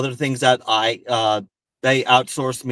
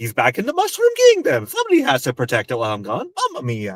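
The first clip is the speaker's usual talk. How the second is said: swooping, big, sing-song cartoon voice. Answering a child's question in character at a party: Mario voice. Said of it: "I always answer any character questions in character".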